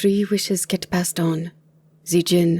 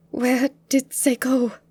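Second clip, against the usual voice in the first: trembling, unsteady, shaky voice, pitched up; 7 semitones higher than usual. Narrator reads Gia's question to Aldine after the smoke clears: shaky voice. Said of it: "She asked in a shaky voice".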